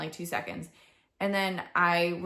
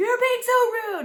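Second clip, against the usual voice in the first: put-on very high-pitched, loud angry outburst; 8 dB louder than usual. Retelling how she finally blew up at someone talking during instructions, retelling her angry outburst. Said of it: "I eventually like blew up and was like".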